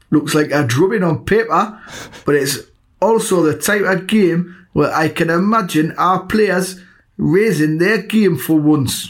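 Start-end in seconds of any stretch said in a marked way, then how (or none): 3.0-9.1 put-on high-pitched, slow Geordie accent. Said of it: "So that's too Geordie".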